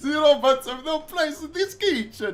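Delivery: very high, bad fake French drifting into Italian. Quoting a chef's kitchen rule, in a bad French accent. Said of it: "didn't even fucking sound French ... am I going Italian?".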